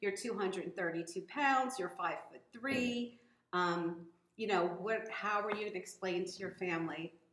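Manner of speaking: usual speaking voice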